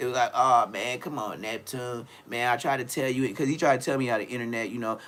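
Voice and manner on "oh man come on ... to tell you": slow, drawn-out pleading, begging tone. Retelling how the others reacted on the live: imitating someone begging. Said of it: "begging like a motherfucker".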